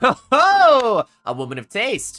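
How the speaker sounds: laughing heartily and out loud, in character. Voicing a character who laughs at a player's joke: in character, laughing out loud. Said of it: "He laughs out loud and he says".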